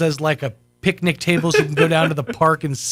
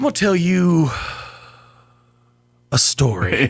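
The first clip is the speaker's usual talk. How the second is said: put-on slow, halting, stilted wise old man delivery. Imitating the wise old dishwasher, very stilted sentence. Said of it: "in very stilted sentence".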